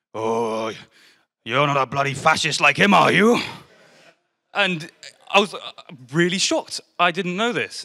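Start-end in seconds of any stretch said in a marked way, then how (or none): 0.1-3.4 loud, deep, rumbling growl. Retelling how a friend's dad answered the name: imitating a growling voice. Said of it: "a deep growl started rumbling in his throat".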